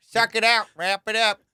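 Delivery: put-on folksy farmer voice. Retelling own advice as an old farmer with a pipe: imitating old farmer. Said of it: "Like the guy fucking smoking a pipe on the farm".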